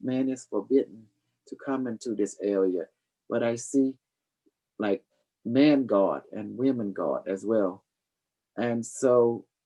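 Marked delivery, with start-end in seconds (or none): none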